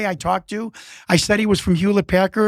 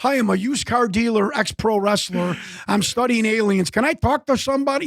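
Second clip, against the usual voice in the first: put-on male voice with a Chicago accent. Retelling a phone call to Space Labs, in a South Side Chicago accent. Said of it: "talking like a South Side Chicago guy".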